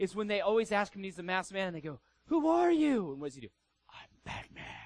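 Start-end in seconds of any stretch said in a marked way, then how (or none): 3.9-4.6 put-on whispered character voice. Quoting a favorite movie line, the masked man answers in Batman voice. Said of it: "Like, in that voice".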